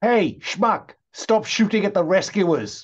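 put-on very high shout. Playing a character calling to a shooter down a corridor: shouting in character. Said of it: "you're shouting that out".

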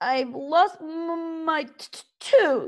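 whining dragon voice. Reading a story aloud, Toothless complains, whiny Toothless voice. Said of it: "Toothless complained whinily".

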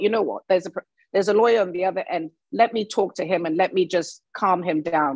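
plain

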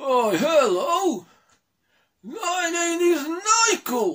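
shrill, very high, full-volume puppet voice. Showing the audience what his puppet's voice sounds like, puppet's voice. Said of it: "I'll give you an idea of what his voice is".

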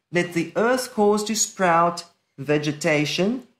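ordinary delivery

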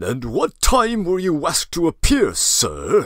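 loud, indignant, aggrieved shout. The assistant superintendent questions a summoned man, shouting, aggrieved. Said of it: "shouted the assistant superintendent".

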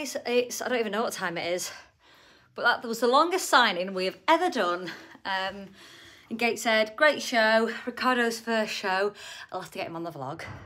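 winded, puffing, out of breath, loud and slow. Vlogging to viewers after a long signing, having been running: out of breath. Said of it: "you can tell I'm out of breath".

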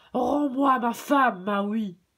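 loud, thundering roar, rumbling like thunder. The eel monster, seeing Maui on the beach, speaks to him: thundering roar. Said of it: "sa voix devint semblable au grondement du tonnerre".

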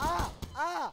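loud, high-pitched screaming.

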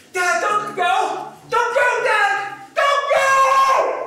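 very high, very slow, drawn-out pleading scream. Retelling the moment Dad starts to leave: retelling screaming, pleading. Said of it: "I start screaming".

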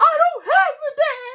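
very high-pitched, weeping, blurted words. Retelling how they told a man they don't have a dad: retelling saying it while crying. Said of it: "I'm crying and saying it".

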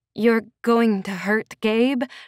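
halting speech, voice catching. The narrator asks him about Gabe: voice catching. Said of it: "My voice caught".

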